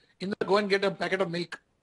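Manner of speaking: plain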